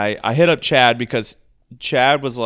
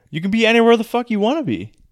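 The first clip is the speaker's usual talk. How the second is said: yelling, pitched very high, shrill; 11 semitones higher than usual. Answering someone's question about where to stand on the court, yelling. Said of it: "you don't have to yell at me".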